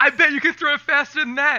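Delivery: mock, high, taunting heckling yell. Recalling fans heckling a pitcher, imitating one of them screaming. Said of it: "him and his bros were like screaming".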